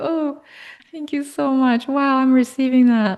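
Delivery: voice catching with tears. Thanking someone who just praised the speaker's work, tearing up. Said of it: "I'm tearing up".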